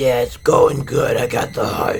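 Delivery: put-on raspy, deep, horrible-sounding voice. Retelling a phone call to a man after his heart transplant, imitating Gino's raspy deep voice. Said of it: "He had this crazy, raspy, deep, horrible voice".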